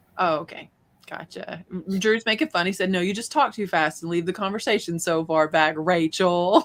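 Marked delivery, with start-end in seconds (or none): none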